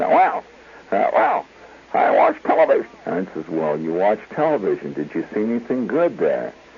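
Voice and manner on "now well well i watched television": small, squeaky little voice. Recalling asking Clarence about his day, answering in Clarence's squeaky little voice. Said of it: "he had this uh, squeak little voice".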